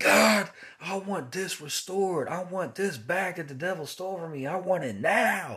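insistent, demanding, high shouted yell. Retelling a prayer from months ago: retelling yelling at God. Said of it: "I was yelling at God".

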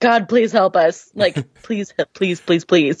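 mock earnest, heartfelt pleading, pleas piled up. Retelling a team's prayer not to lose: imitating heartfelt pleading. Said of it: "really pleading heartfelt".

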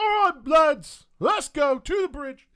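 very high, very loud call from a distance. Narrating a game scene, a lieutenant heard in the distance calls his lads; distant call to troops. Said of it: "you'll hear kind of in the distance that lieutenant say".

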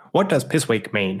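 slow, drawn-out, drawling voice.

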